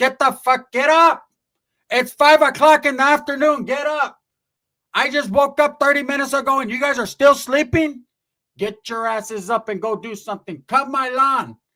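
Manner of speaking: play-acted fed-up ranting, loud, angry, full steam. Retelling how the aunt yelled at everyone to get up: imitating aunt yelling. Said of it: "she's yelling at them".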